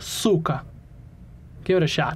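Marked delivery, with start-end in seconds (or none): 0.0-0.6 cyka with the first syllable leaned on. Teaching others how to say the word, stress on first syllable of cyka. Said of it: "The accent on that is on the first syllable".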